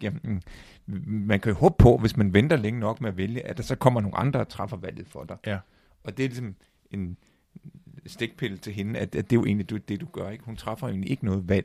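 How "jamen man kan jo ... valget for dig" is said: ordinary talk, nothing marked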